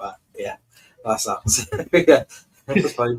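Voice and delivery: talking through laughter. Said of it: "I'm laughing at that plate comment".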